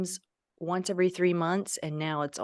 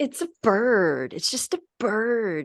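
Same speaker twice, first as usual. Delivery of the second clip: very slow, very drawn-out, teasing mocking voice; 4 semitones higher, 4 dB louder than usual. Retelling what a daughter said in the car, mocking imitation of daughter. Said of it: "I'm just making fun of her".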